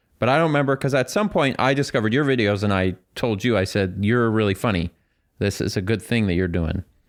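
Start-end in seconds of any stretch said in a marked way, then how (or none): none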